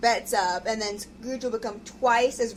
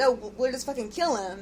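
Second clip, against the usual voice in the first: ordinary delivery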